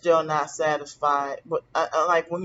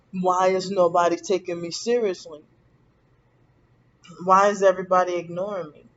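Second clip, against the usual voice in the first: ordinary talk, nothing marked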